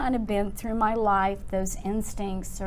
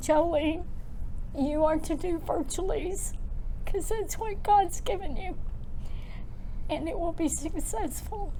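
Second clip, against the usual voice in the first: high, tearful voice, crying through the words; 9 semitones higher than usual. Telling listeners her mother's words right before she passed, crying. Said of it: "this is why I'm going to cry even harder".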